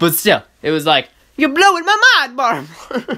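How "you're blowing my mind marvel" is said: silly, grating, high sing-song put-on voice. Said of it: "Are my voices getting annoying?".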